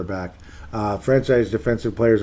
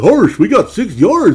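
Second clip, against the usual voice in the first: put-on goofy cartoon voice, very high, very loud; 10 semitones higher, 12 dB louder than usual. With seconds left on a check down, doing the Goofy voice. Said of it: "I just started doing the goofy voice".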